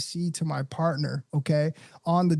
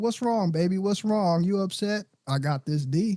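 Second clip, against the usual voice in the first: put-on soothing, coaxing, comforting sweet talk; 3 semitones higher than usual. Acting out a brother talking to his upset partner: imitating a brother soothing his partner. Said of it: "We walk around and we're like".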